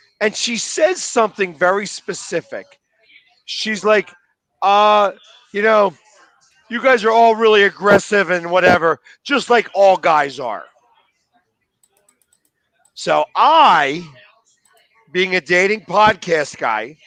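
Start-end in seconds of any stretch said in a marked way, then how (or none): none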